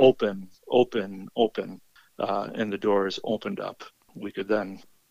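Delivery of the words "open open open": ordinary talk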